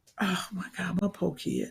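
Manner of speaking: breathy whisper under her breath.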